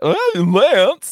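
very high, loud, squeaky voice. Imitating own earlier intro line: imitating own squeaky voice. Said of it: "My voice kinda squeaked there a little bit".

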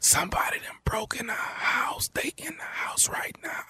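urgent, hushed whisper, barely audible. On a phone call the other person can barely hear, whispering. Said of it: "I barely can hear".

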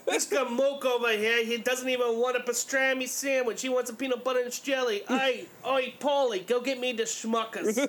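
slow New York deli guy calling voice. Retelling a man's sandwich order: new york deli owner voice. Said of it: "makes it sound like he owns a New York deli".

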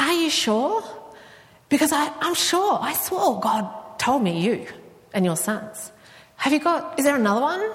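nervous, uncertain, high-pitched tone.

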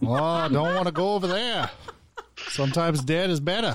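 put-on Maine accent. Joking with co-hosts after a comment about accents: Maine accent. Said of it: "that's a Maine accent, everybody".

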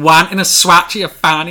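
put-on very loud, high, shouty Scottish child voice. Retelling a favourite comedy sketch about kids at an ice cream van, Chewing the Fat kid accent. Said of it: "I can't do the accent".

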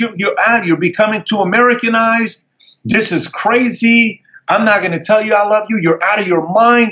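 very high, freaked-out, flipped-out ranting. Retelling how his father reacted: imitating someone flipping out. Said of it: "He flips out".

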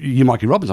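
ordinary delivery

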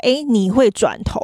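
ordinary talk

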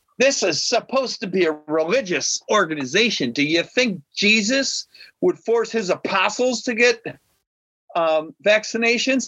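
high-pitched, belligerent, screaming voice. Retelling a belligerent person's complaint about forced vaccinations: imitating someone screaming. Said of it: "she's screaming".

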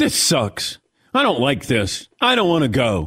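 put-on sulky whiny teen voice, swooping pitch. Mocking a golfer who sounds like a fifteen-year-old: mocking a whiny fifteen-year-old. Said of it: "he sounds like a fifteen-year-old".

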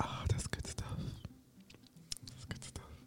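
very quiet, barely audible, hushed whisper. Tasting cherries and Cool Whip during a break segment, whispering. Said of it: "I should whisper because that's the vibe".

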